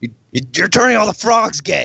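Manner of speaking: high-pitched ranting impression.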